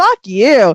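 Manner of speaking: put-on, unflinching, fully sure-of-herself tone. Retelling how a girl answered a reporter: imitating a fully confident retort. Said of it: "full confidence".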